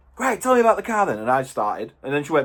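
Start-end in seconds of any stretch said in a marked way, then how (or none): 0.2-1.2 blunt, no-nonsense, aggressive, pitched-up delivery. Retelling what a woman said when he started describing the car, mock-aggressive tone. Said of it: "that was just damn right aggressive".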